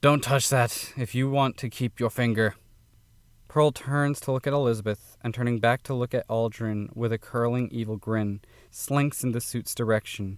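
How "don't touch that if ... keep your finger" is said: groggy, growling, barely awake voice. Reading a story aloud, a character warns someone off: growling, just-woken voice. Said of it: "speaks in a growling, recently awakened voice".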